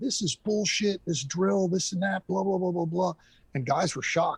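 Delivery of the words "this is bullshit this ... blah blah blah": mock high, furious, angry screaming rant. Retelling losing it during a drill and ripping off a mask; retelling own angry yelling. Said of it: "I started screaming and yelling".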